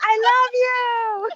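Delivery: mock very high yell, "you" drawn out. Telling a story, the speaker acts out yelling back at a man mid-spiel, retelling own yell. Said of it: "and I yell out loud".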